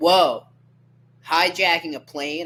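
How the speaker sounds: big, brash, very loud, booming blurted-out outburst. Speaker acting out what he said back then, said really loudly. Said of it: "I'm gonna say it really loudly too".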